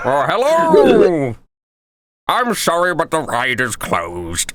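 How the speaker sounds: slow, drawled comic voice with big pitch swoops. Voicing a construction worker who tells people the ride is closed: Tim Allen voice. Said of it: "Tim Allen, let's go".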